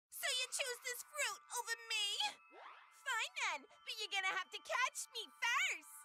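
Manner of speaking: put-on New Jersey accent. Taunting someone who wants a piece of fruit: new jersey accent. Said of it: "She sounds like she's from Jersey".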